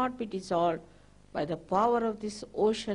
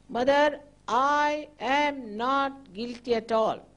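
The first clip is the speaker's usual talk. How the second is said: slow, self-assured, certain, fully confident delivery; 2 semitones higher, 3 dB louder than usual. Leading a guided exercise, showing the line to repeat: full confidence. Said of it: "full confidence you have to say".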